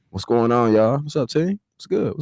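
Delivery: emcee-style announcer voice. Greeting the team after being introduced, in an announcer voice. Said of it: "That was your announcer voice".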